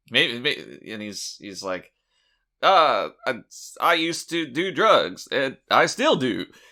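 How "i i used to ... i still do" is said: jittery, on-edge, nervous comic delivery. Imitating a comedian who seems nervous all the time: imitating a nervous comedian. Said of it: "that's what he sounds like".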